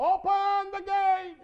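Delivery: high, slow, drawn-out hollered call.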